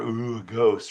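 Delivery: taunting, mocking voice. Retelling how an older brother made fun of her: imitating someone mocking. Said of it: "made fun of her".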